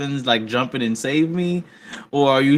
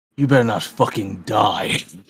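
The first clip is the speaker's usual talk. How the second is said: deep, low muttered aside; 5 semitones lower than usual. Voicing a character muttering to an ally before a duel: under his breath. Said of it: "Roth says under his breath".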